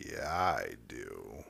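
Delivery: creepy, very low, hushed, creaky murmur. Retelling what Caden said when only two of them were in the building, weird creepy voice. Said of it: "in this weird, creepy-ass voice just go".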